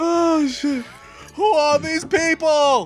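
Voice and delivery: very high pitch, very slow, stretched-out drawl. Doing an impression after a story about a TV episode: Seinfeld impression. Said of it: "that's my Seinfeld impression".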